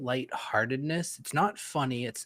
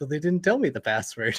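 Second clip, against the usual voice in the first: dejected, let-down, sad tone, a bit loud; 5 dB louder than usual. Retelling a game character's line after he screams a password: imitating a sad game character. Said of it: "he gets all, like, sad".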